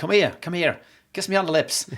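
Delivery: put-on silky, lovely Irish accent. Speaker retelling what a woman said on coming home, in a silky Irish accent. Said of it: "and this lovely silky Irish accent".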